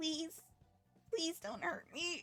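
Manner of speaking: pleading robot voice. Voicing a captured robot that begs the captors not to hurt it: pleading robot voice. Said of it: "you do hear it speak out. It's just like".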